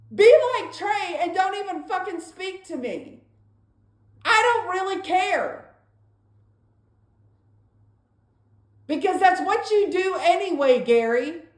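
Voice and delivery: bitter, fed-up, angry, resentful tone. In an argument about not looking for a job: loud tone. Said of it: "I'm talking to you in a loud tone".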